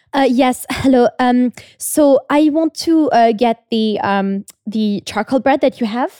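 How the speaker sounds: put-on French accent. Working the till, the speaker quotes a French woman who came in: French accent. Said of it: "I'm going to try and do her accent".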